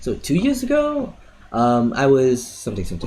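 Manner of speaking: pausing after the words "two years ago".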